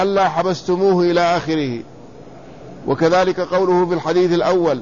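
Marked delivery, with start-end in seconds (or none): none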